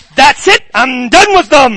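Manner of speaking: booming, loud, exasperated, totally fed up voice. Retelling a passage of scripture from Exodus: dramatizing God. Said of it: "I'm dramatizing God".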